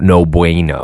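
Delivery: over-the-top, exaggerated general American accent.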